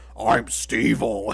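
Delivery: absurdly deep silly voice. Describing a funny show scene to a friend, quoting a character in a ridiculously low voice. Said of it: "ridiculously low voice".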